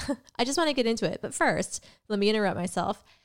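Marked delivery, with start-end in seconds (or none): 0.4-1.2 very fast, rushed delivery while laughing. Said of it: "Oh, but before I do".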